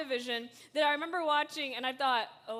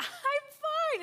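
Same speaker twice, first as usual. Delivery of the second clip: put-on sitcom-style voice, much higher, rising, forced insistence. Recall the Friends episode about insisting you are fine, as Ross from Friends, voice getting higher. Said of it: "his voice gets higher and higher and higher".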